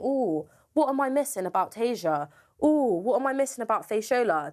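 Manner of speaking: snide, scornful, derisive put-on musing voice. Speaker complains about people who nominated them: mocking imitation of others' thoughts. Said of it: "have a thing in their head thinking".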